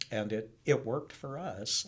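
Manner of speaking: ordinary talk, nothing marked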